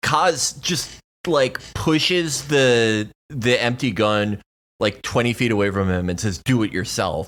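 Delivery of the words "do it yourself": low, spiteful delivery. Retelling a character's reply to a man begging to be killed, mock-spiteful retort.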